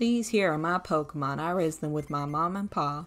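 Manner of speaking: put-on terrible Southern accent. Playing a Pokemon game, joking in a terrible Southern accent. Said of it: "That was a terrible Southern accent".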